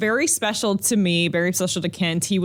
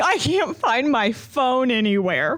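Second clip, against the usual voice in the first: put-on sloppy drunken slurring mumble, barely talking, pitched up; 6 semitones higher than usual. Impersonating a drunk man who phoned the speaker, imitating drunk slurred speech. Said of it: "he is so drunk he can hardly speak".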